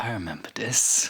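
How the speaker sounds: puzzled whisper, as if to oneself. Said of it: "I was just like".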